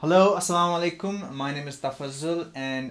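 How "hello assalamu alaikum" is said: very energetic, peppy, high-energy voice, pitched up. A speaker introduces himself, trying to sound very energetic. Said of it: "I'm trying to sound very energetic".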